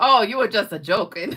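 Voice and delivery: put-on German accent. Retelling what a man said after a joke about Germany, thick German accent. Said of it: "he's got a real thick German accent".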